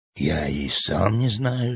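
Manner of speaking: soft, low, slow, hushed voice. A boy answers Ellie's timid question: quiet reply. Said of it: "так же тихо ответил мальчик".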